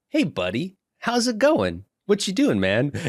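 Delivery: very high, swooping, mock breezy, nonchalant tone. Retelling an anime scene, acting out the character Dunn: imitating nonchalant Dunn. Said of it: "it's just all nonchalant".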